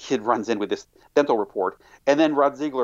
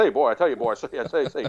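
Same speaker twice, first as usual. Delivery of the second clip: put-on stuttering Southern accent, pitched higher; 3 semitones higher than usual. Describing an old southern senator heading hearings, doing his Foghorn Leghorn stutter. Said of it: "would even do that kind of same stutter like".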